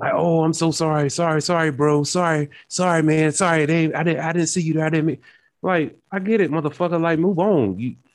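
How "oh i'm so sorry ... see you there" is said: put-on over-apologizing, much higher, slower. Describing how a guy who bumped him might react, imitating a super apologetic guy. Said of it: "or he's going to be super apologetic".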